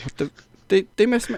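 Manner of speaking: very high, confused, bewildered stammer. Retelling a moment when pyro was missed: imitating confused Cody. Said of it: "Just looking totally confused, looking back at the stage, going".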